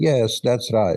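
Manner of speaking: put-on thick Hungarian accent. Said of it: "She spoke with a thick Hungarian accent".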